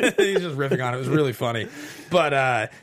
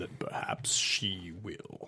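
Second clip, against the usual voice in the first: deep, resonant put-on voice, lower and quieter; 6 semitones lower, 12 dB quieter than usual. Trying a deep James Earl Jones impression of a movie line. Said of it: "you get some nice resonance in there".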